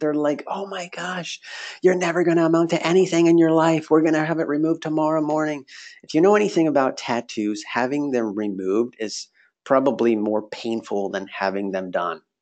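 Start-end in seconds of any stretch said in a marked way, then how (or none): 0.5-5.6 high-pitched, loud screaming. Retelling his parents reacting that morning, imitating parents screaming. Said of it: "So much screaming".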